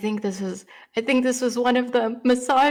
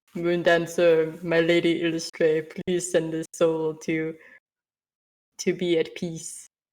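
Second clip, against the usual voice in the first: big deep voice, slow and drawn out; 5 semitones lower than usual. Quoting the line he says in that voice: deep voice. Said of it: "In that deep voice".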